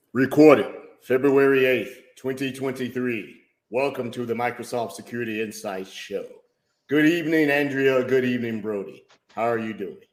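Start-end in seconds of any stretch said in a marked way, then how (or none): 3.7-10.0 deep, dashing low voice. Host welcomes listeners to the show and greets his co-host, deep voice. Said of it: "You sound so very um, just dashing this evening with that deep voice".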